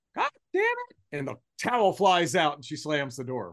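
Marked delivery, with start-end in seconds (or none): 0.1-0.9 put-on small, very high-pitched little kid voice. Parent retells their little daughter's outburst at bedtime, little child's voice. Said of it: "we hear this little voice".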